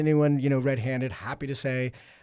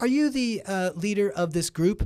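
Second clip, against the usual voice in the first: high-pitched, hesitant, halting broken English; 6 semitones higher than usual. Retelling a restaurant owner asking a question, imitating broken english. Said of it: "in sort of broken English".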